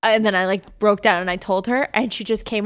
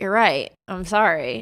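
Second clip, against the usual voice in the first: ordinary delivery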